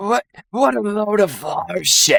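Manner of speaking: put-on sloppy, very high, shrill drunken scream. Voicing a drunk character in a story, speaking in a very drunken voice. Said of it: "He says very drunkenly".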